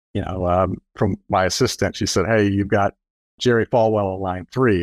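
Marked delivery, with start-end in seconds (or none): none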